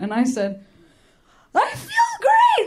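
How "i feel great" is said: very high, cracking, breaking yelp. Speaker retelling answering a woman at a barrier, reenacting a voice crack. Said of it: "my voice cracked".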